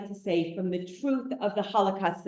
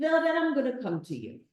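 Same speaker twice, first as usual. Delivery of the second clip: terrible, high-pitched put-on Eastern European accent; 5 semitones higher, 3 dB quieter than usual. Retelling what a woman said to Zilla, in a bad Eastern European accent. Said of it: "I do the worst Eastern European accent you've ever heard".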